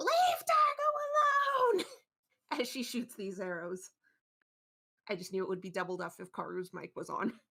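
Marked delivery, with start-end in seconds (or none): 0.0-1.8 piercing shriek, very high and very loud. A speaker voices Tika as she shoots arrows: Tika screaming. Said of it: "Tika just screams".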